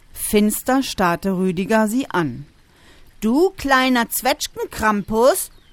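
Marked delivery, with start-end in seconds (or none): 3.2-5.5 cross, pitched-up scolding voice. Maxim, glared at by her brother Rüdiger, scolds him back, scolding. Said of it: "schimpfte Maxim".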